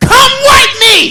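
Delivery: put-on shrill, very high, loud toddler scream. Retelling a three-year-old's call from the bathroom door: imitating a screaming toddler. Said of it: "a three-year-old screaming from the bathroom door".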